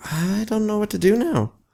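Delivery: thin, very high squeaky voice. Wondering aloud what to do next while building: squeaky voice. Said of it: "'cause my voice is squeaky".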